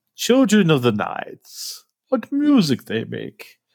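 weird, eerie, slow, drawn-out, swooping voice. Quoting Dracula's sudden strange line: creepy Dracula impression. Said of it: "something really weird and creepy".

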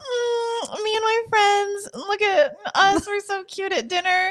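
very high, very slow chipmunk squeak, long mm. Teasing the other speaker about her dinner posts: mocking imitation of Celia. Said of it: "Who talks like this?".

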